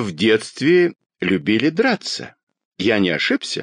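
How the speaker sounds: ordinary delivery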